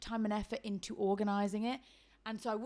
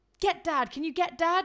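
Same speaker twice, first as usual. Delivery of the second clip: put-on urgency, slower; 7 semitones higher, 8 dB louder than usual. Retelling the phone call to mom before the news breaks: retelling an urgent request. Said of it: "really quite urgently".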